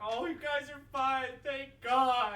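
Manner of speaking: very loud, drawn-out, tearful crying with relief. Player voicing a character relieved the others are fine: crying with a big grin. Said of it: "big teethy grin as he's just crying".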